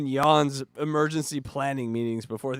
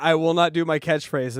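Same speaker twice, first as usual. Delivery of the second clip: plain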